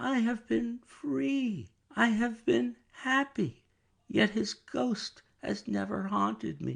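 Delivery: whispering. Reading a novel aloud, the daughter repeats her fear: whisper. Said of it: "sunk to a whisper".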